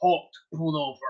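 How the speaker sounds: mechanical, machine-like robotic voice. Retelling what a voice from the car says: robotic voice. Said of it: "it's like a robotic kind of voice".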